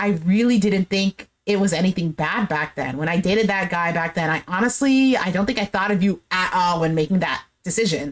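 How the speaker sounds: ordinary talk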